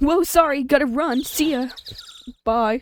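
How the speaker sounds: laid-back surfer-dude voice and way of talking. Redoing a character voice from before, a typical surfer boy voice. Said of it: "He's like a typical surfer boy".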